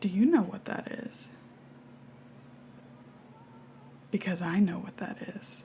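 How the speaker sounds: very quiet, hushed, barely audible whisper. Charlie's reflection in a book speaks to him, very quiet. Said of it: "you hear very quietly".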